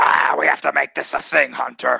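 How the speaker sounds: rough, creaky, raspy voice. Showing the other speaker a fuller version: Vince McMahon voice. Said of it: "that would be more like".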